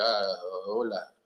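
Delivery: fake broken Spanish. Imitating someone greeting Spanish speakers: imitating horrifically broken Spanish. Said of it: "he insists on speaking horrifically broken Spanish".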